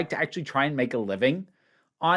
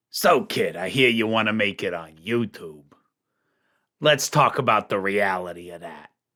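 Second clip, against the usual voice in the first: very low, strained, throaty, scratchy put-on rasp; 10 semitones lower than usual. Opening a video, throat-scratching put-on voice. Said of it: "scratching at the back of my throat doing that voice".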